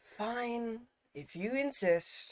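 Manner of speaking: very quiet, hushed put-upon sigh, drawn-out "fine". Voicing a character who gives in to the players: sighing, very put-upon. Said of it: "sighs in a very put-upon way".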